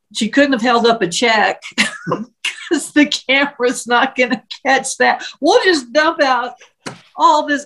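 words breaking into laughter while speaking. Recounting her reply to the prosecuting attorney's question about the case, laughing while speaking. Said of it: "I'm sorry if I'm laughing".

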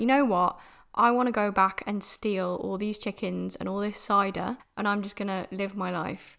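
usual speaking voice

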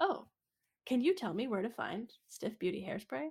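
sugary, sweet, very polite tone. Retelling a character asking a worker for hairspray: imitating Poofenplatz asking very nicely. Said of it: "very nicely, Poofenplatz is like".

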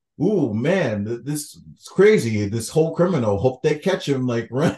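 ordinary talk, nothing marked

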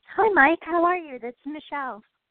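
bubbly, lively tone. A caller greeting the radio host on air, sounding bubbly. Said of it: "You sound bubbly".

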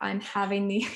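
ordinary delivery

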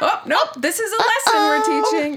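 very high, put-on sweet, polite mom voice. Imitating a parent turning down someone's request for a hug, in a polite mom voice. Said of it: "It's the polite mom voice".

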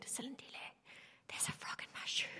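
very soft, hushed whisper. Retelling a moment from grade one: imitating own past whisper. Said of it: "I whispered to Silindile".

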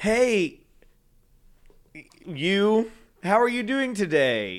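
acted, fumbling, awkward stammer, high and slow. Retelling greeting straight men while anxious: imitating own awkward greeting. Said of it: "Around the straight men, I'm fully just like".

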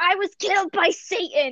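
stretched-out, high, drawn-out yelp or wail. Retelling being killed in an online game with an open mic: retelling a scream. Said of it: "I just kind of screamed".

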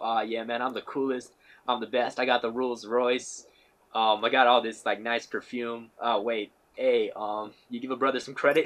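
ordinary talk

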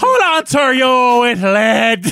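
put-on Irish accent. Rereading a quoted line from the war story, asked to do it as Irish. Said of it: "you want me to do it as Irish?".

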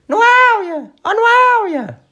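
very high, thin, irritating put-on voice. Retelling someone calling out for Noélia, a Cláudio Ramos impression. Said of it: "mega irritante, parece a Cristina Ferreira, tipo versão low cost mesmo, a dizer assim".

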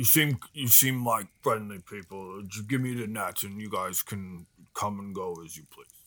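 slow-witted, dim-witted ogre voice. An ogre on the beach speaks to the group in a dim-witted ogre voice. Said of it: "an ogre on the beach side. / he kind of stops and like turns and looks at you and then starts to sing. / He has an intelligence of -3. / I ain't seen no fishing net like that".

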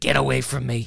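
put-on New York accent, smoker's voice. Imagining a woman rejecting his approach, smoker's new york accent. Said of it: "the 10-year smoker with the New York accent".

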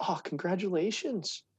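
mock-kind sarcastic tone. Retelling congratulating college athletes in the hallways, imitating own past kind sarcasm. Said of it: "I used to kindly go".

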